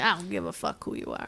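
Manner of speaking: put-on, laid-on Italian accent. Voicing Halvard replying after Maury introduces everyone, in Halvard's Italian accent. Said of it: "Always goes back to Italian".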